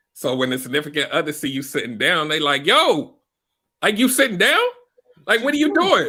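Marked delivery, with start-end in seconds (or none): 2.7-6.1 put-on raised voice, higher and louder. Retelling a partner's complaint about sitting down: imitating partner's raised voice. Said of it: "the voice elevated".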